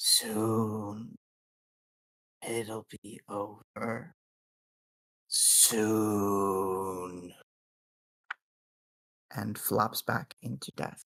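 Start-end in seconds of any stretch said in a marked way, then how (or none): 0.0-7.3 very slow, drawn-out, final dying croak. Narrating a tabletop game, voicing a corpse's last words in a final croaking voice. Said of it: "in a final croaking voice".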